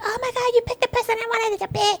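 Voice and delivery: put-on very high, squeaky young teenage boy shouting. Retelling a teenage boy suddenly yelling in their ear; imitating a yelling teenage boy. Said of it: "this little teenage boy comes on my ear and just starts yelling like".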